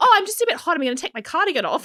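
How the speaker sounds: very high, panicked voice, pitched way up. Retelling how Meghan Markle reacted as the chef narrated the lobster's death: imitating Meghan Markle panicking. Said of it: "she was so panicking".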